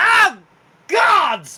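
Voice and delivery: very high, very loud, pained yowl. Voicing a raccoon banging his hurt tooth on armor, Lord Jimothy in pain. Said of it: "and he goes".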